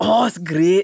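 put-on Scotland accent. Retelling what a police officer at a roadblock said: imitating a Scottish cop. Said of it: "And the cop was Scottish".

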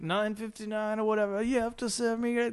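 put-on irate yell, high-pitched and angry. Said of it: "start yelling at the manager".

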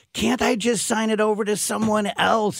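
put-on woman's scream. Recounting a bank visit, quoting a woman at the tellers; retelling a woman screaming. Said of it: "she's screaming at the tellers".

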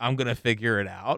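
ordinary delivery

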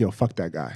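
low, soft, dismissive scoff.

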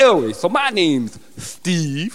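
exaggerated put-on lisp on the s in "Steve". Introducing a made-up character, steve, in a storyline, with a put-on lisp. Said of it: "I've applied a bit more of a lisp".

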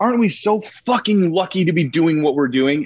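proclaiming, projected announcing voice. Speaker retelling how she announced to everyone in the room each shooting day, retelling a super-loud announcement. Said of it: "she would say it super loud".

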